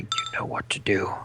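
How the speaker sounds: speaking low and quiet. A player voicing their character in a game, speaking to another character: low voice. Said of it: "in a low voice".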